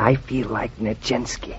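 soft, slow whisper. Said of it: "we don't have to whisper anymore".

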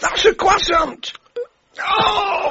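high, panicked cry. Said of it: "Calm down, [name]. Get a grip".

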